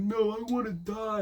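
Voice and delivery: very slow, high, dragged-out yell. Retelling someone's answer after being asked if okay: imitating someone yelling. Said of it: "and he yells it".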